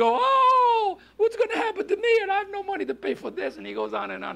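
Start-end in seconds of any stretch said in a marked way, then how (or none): 0.2-3.6 put-on crying male voice, higher. Retelling a man's words after his son's tractor hit a house: imitating someone crying. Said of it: "began to cry".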